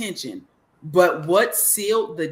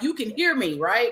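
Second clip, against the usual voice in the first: pitched-up, imitated yelling; 5 semitones higher than usual. Retelling yelling at a TV screen: imitating own yelling at the TV. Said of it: "I'm yelling at this T V screen like".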